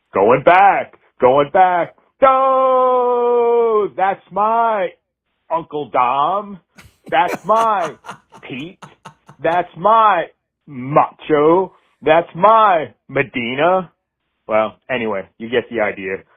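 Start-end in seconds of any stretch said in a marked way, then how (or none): 0.1-13.9 very high, slow radio baseball announcer voice. A former college radio host does a live baseball call for Pete; radio play-by-play imitation. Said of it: "here's my game season live imitation".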